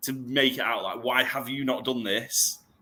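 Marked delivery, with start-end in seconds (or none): 1.0-2.6 put-on passive-aggressive tone. Retelling own habit at the checkout conveyor belt: imitating a passive-aggressive tone. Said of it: "do it in a really passive-aggressive way".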